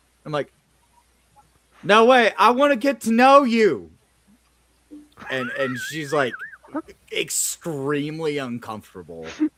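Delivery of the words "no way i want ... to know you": mock yelling, higher and louder. Retelling talking to someone across a bar: retelling own screaming across a bar. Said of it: "I'm just, like, screaming across the bar".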